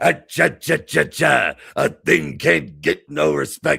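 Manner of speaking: loud, gravelly put-on voice. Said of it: "He's doing a [name] voice. He's like".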